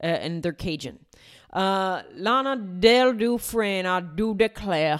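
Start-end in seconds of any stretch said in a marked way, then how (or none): 1.5-5.0 put-on, very slow Southern belle accent. Speaker guessing at a Louisiana accent for a made-up name, attempted Southern accent. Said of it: "Now I'm getting into Savannah, Georgia".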